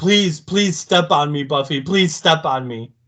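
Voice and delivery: eager, pleading, begging tone. Retelling a scene as Xander begging Buffy: imitating Xander pleading. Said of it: "he's like".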